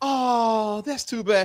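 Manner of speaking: slow, sweet, sultry voice with long Oh. Retelling how a woman answered a man about a bottle, imitating a sultry, sweet woman. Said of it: "that sultry, sweet woman voice".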